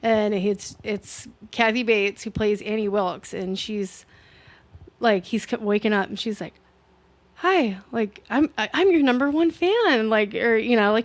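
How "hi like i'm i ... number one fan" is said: sweet voice, lifted high. Retelling a film scene where the nurse greets the injured man: sweet voice imitating Annie Wilkes. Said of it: "she comes off so sweet".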